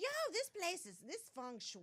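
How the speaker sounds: very high, swooping, sing-song slangy chatter. Retelling what Clint says coming into her place: imitating Clint. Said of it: "He's like".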